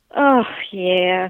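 lacking enthusiasm. Mom replying when asked to talk about a game show, unenthusiastic. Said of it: "You didn't sound very enthusiastic".

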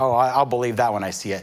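ordinary talk

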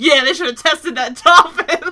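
loud, firm delivery with total conviction. Repeating another speaker's line back: imitating a convinced tone. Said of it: "the conviction with which you just said".

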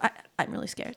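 whispered, soft stammer on the first I. Describing a movie character's dialogue, the speaker imitates her stutter: imitating a stutter. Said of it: "she'll throw in a stutter".

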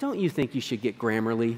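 gentle, tender, soft and low voice. Speaker retells what his wife said to him, mock-gentle suggestion. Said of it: "my wife has come to me and gently said".

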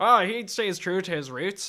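clumsy, bad, drawn-out put-on Northern Irish accent. Recounting a scene, quoting a man's line in a bad Northern Irish accent. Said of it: "That was a bad Northern Irish accent".

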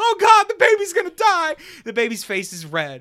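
frantic, shrill panicked screaming, very high and loud. Retelling how their mom screamed when the baby's face went red, imitating panicked screaming. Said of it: "my mom is just screaming".

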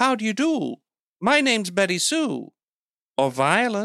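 put-on high-pitched, 1950s movie mid-Atlantic accent. Describing a sketch of a woman playing a 50s movie character, 50s movie mid-atlantic accent. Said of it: "doing that mid-Atlantic thing".

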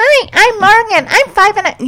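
put-on very high, robotic little girl voice. Imitating a kid who introduces herself, do Morgan's little robot girl voice. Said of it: "she sounds like a little robot girl".

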